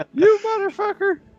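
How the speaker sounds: very high screaming yell. Voicing a talking torch yelling at the player who holds it: screaming and yelling torch. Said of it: "He's screaming and yelling".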